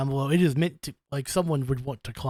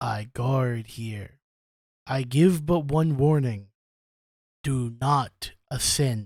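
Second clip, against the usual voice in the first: deep, low, slow, drawn-out stone guardian statue voice. Voicing a giant statue that warns the players: low, booming voice. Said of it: "Low, booming voice".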